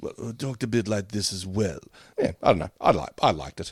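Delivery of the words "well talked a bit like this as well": honeyed, graceful, elegant, flowing, mellifluous voice. Explaining who inspired a cartoon voice, doing an elegant James Mason voice. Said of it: "who all had that very sort of elegant voice".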